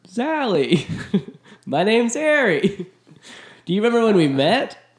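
very high, slow, drawn-out voice. Answering a request to do a Billy Crystal impression: Billy Crystal impression. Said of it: "Can you do a Billy Crystal impression?".

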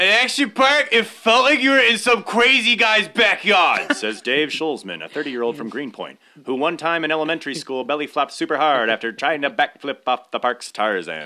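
put-on old-timey radio announcer. Reading a true Action Park story to the others, in an old-timey radio announcer voice. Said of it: "like old-timey radio announcer".

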